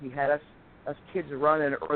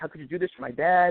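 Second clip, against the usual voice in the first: put-on angry crying voice. Retelling coming home after a long run as a child: retelling crying angrily. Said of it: "I'm angry at him, and I'm crying".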